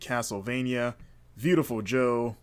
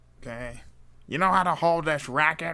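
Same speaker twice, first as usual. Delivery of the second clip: full-on cartoon game-character voice; 4 semitones higher than usual. Acting out a first meeting with Waluigi at tennis: Wario voice. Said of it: "that's Wario, by the way".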